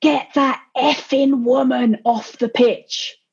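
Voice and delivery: put-on mild yell, held back, slow and drawn out. Retelling how Megson screamed across the pitch: imitating a screaming shout. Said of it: "Megson screamed across the pitch".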